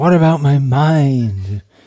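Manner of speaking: slow, anguished, tortured, drawn-out voice. Retelling a hippie girl's repeated question in a San Francisco anecdote, in a tortured voice. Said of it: "In a tortured voice".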